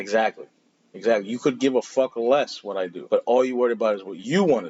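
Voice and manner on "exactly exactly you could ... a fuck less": ordinary delivery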